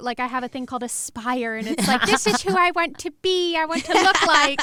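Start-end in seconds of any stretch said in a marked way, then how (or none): 2.1-4.6 put-on, raised-pitch cottage girl voice. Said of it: "That is such a cottage girl voice".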